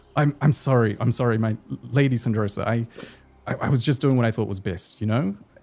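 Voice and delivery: cowering, shrinking, apologetic tone. A guard apologizes to lady syndrosa after her scolding, cowering and apologetic. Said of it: "He starts to like cower".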